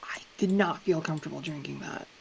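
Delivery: very quiet, hushed, low-volume delivery. Turning to the others in character after the host leaves: very quietly. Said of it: "very quietly being like".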